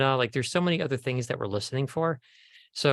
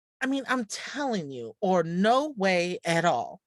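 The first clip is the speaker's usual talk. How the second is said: emotive reading, higher pitch; 6 semitones higher than usual. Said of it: "add a lead in before that".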